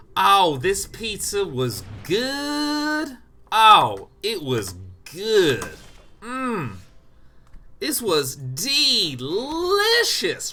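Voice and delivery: loud, very slow Southern drawl, "good" stretched. Explaining how a southern accent handles adjectives, demonstrating a drawn-out southern accent. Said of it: "what you do with a southern accent is you just say the adjective for a long time".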